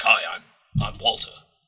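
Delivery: gruff, superhero-type comic-book hero voice. Speaker imitates how someone starts out voicing Walter, gruff Walter voice. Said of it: "standard gruff Batman type voice".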